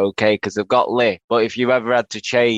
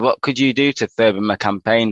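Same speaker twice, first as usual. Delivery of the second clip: ordinary talk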